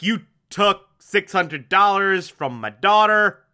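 ordinary delivery

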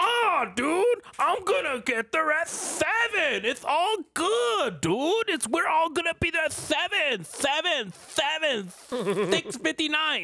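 very high, slow, stretched-out dude drawl. Complaining that a friend always promises to arrive early: imitating a friend. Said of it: "You say".

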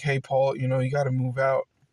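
whispered voice. Retelling what the mother said when asking him to leave: imitating a whisper. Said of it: "kinda whispered me".

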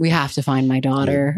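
mock flat deadpan delivery. Describing a movie scene, acting out the lead's reaction: imitating Ben Affleck's deadpan. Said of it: "Ben Affleck's reaction is just like deadpan".

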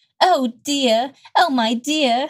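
Southern belle accent. Trying out a line aloud, a speaker attempts it in a Southern Belle accent. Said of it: "spoken in a Southern Belle accent".

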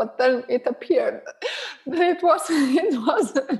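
high, helpless laughing through the words mid-sentence.

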